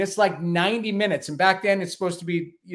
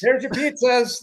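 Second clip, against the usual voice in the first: all happy, cheery, pitched-up voice; 7 semitones higher, 3 dB louder than usual. Retelling handing over pizzas at a biker den: imitating own happy delivery voice. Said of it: "like, all happy".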